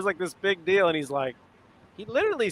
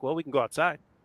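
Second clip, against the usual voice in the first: put-on very nice, polite tone; 2 semitones lower than usual. Retelling a friend's reply to someone talking trash: imitating someone saying it very nicely. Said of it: "he'll just very nicely be like".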